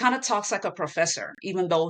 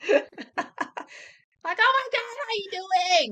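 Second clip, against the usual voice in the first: imitated scream, higher. Retelling how people greet them at conventions: imitating someone screaming. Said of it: "All the screaming".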